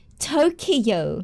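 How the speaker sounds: mock Western pronunciation of "tokyo". Imitating how Westerners say the city name: Western pronunciation of Tokyo. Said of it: "I heard that a lot".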